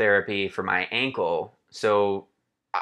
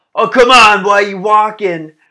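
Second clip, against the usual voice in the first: very high, very loud jeering, heckling shout; 12 semitones higher, 13 dB louder than usual. Retelling a spectator heckling a runner at mile twenty-three: imitating a spectator shouting. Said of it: "this guy shouts at me".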